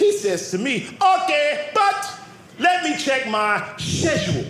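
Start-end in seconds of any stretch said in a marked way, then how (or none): 1.0-4.5 Caribbean-British dialect. Quoting a buddy's reply to a lunch invitation, in a British-Caribbean accent. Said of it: "They have a British Caribbean feel to their dialect".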